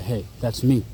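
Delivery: ordinary talk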